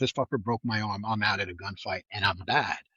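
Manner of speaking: usual speaking voice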